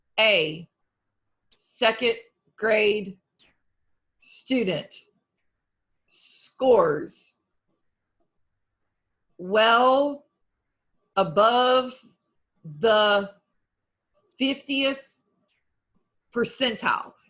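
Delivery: loud, choppy, disjointed word-by-word reading with no flow. A presenter demonstrates how a student read a sentence, choppy word-by-word reading. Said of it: "read this competence or one of these sentences the same way".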